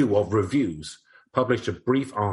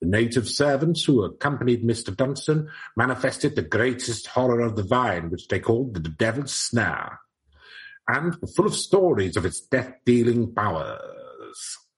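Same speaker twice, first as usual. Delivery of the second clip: put-on old-timey 1889 newspaper reading voice. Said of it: "I'll read it in eighteen eighty-nine voice".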